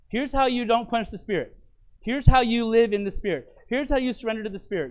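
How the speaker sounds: ordinary delivery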